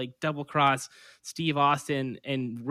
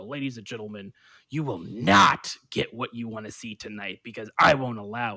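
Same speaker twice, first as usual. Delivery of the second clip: stern, serious, condescending and patronizing tone; 3 semitones lower, 3 dB louder than usual. Show how an uncool wrestling character addresses ladies and gentlemen, imitating a serious, patronizing talker. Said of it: "serious and talks like this".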